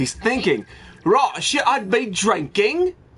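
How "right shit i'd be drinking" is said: put-on British accent. Speaker voicing what someone is thinking, in a put-on British accent. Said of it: "Why am I doing a British accent?".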